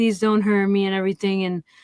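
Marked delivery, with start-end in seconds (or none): 0.0-0.9 put-on desperate pleading tone. Retelling a movie scene where the victim begs a gunman: imitating pleading for her life. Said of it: "pleading for her life".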